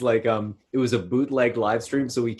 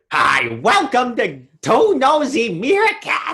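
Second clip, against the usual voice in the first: loud, slow delivery with big pitch swoops; 13 semitones higher, 7 dB louder than usual. Showing how a comedian would welcome listeners: loud Gilbert Gottfried impression. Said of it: "he's very loud".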